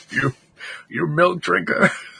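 raspy, soldier-like voice. Imagining a character drinking milk being taunted: generic Skyrim Stormcloak voice. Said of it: "the generic, like, Skyrim Stormcloak voice".

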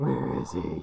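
very low, deep, chesty voice. Describing a prank plan involving masks, saying the line in a Batman voice. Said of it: "then do the Batman voice".

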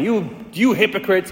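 harsh, scolding, berating tone, acted out. Retelling the gospel scene of Jesus berating the Pharisees: imitating Jesus yelling. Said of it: "He's just yelling at them".

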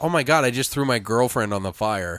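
ordinary delivery

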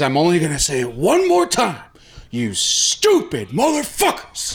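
play-acted enraged coach voice, swooping pitch. Retelling a coach throwing a chair before his speech: imitating angry coach Bill Friedel. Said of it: "throws a fucking chair, and says".

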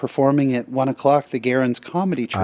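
usual speaking voice

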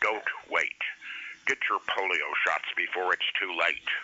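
urgent, low, gloomy voice-of-doom tv announcer. Recalling an early-1960s TV announcer, imitating a gloomy TV announcer. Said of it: "this gloomy voiced announcer. He was like the voice of doom".

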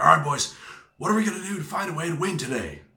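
big, loud, booming voice. Quoting his old manager's morning talk to the team, imitating a booming voice. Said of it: "in his booming voice".

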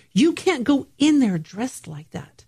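put-on yelling, called out loud. Retelling a friend yelling from a car window: imitating a friend yelling. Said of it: "a friend of mine's yelling out the window".

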